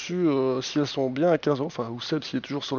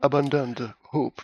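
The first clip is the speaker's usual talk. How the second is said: fine, proper English accent. Talking with another speaker, the speaker repeats a name: nice English accent. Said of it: "avec un bel accent anglais".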